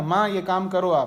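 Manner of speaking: loud, bossy, commanding tone. Explaining how children nowadays talk to their mother: loud, mock-commanding tone. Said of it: "जैसे जोर से बोलता है ना".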